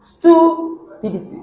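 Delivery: stupidity stressed on first syllable. Demonstrating word stress to learners, with stress on stu in stupidity. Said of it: "Let's start from stu".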